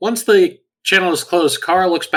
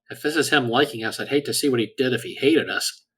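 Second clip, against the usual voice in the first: muttered, quieter than the surrounding speech; 4 semitones lower, 7 dB quieter than usual. Player voicing Kara in a tabletop scene, muttering under her breath. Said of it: "Kara mutters under her breath".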